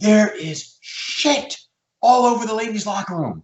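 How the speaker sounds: acted-out shrill scream, very high-pitched. Speaker recounting a woman who burst into his office, retelling her scream. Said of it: "she screams".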